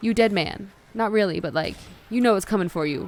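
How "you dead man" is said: put-on stern scolding tone. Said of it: "talked very sternly to them".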